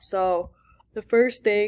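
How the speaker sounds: yawning, tired, mid-yawn. Teacher walking students through a lab assignment, yawning. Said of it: "sorry, yawning".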